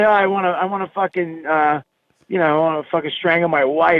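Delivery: normal talking voice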